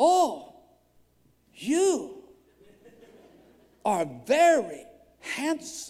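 slight Filipino twang, light and sing-song. Retelling what a woman said to him; slight Filipino accent. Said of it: "twang a little Filipino accent".

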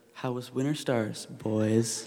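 mock, slow, heavy sarcasm laid on thick. Retelling how she greeted the boys she had caught, in a mock super-sarcastic tone. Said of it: "she just says in this super sarcastic tone".

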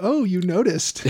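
plain

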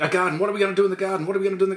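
mock fretful, uneasy, anxious, worried repeated delivery. Voicing Adam and Eve in a retold Genesis scene: anxious. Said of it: "they start getting anxious".

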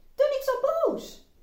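high, loud scolding, snapped out sharply.

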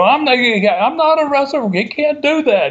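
mock, shrill, very high-pitched screaming shout. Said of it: "he continued to shout".

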